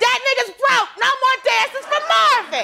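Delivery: very high-pitched, shrill yell. Recounting showing up at the strip club where Marvin was: retelling a yell. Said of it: "showed up at the strip club he was at and yelled".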